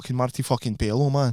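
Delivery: put-on Glaswegian street-lad Scottish accent. Showing the others how to get into a scottish accent: scottish accent. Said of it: "I reckon I've got an alright Scottish accent".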